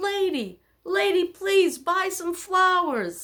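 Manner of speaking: mock street-seller call, very high, loud, called out. Retelling a flower seller calling out to passersby: imitating a flower seller yelling. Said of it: "this guy starts yelling about".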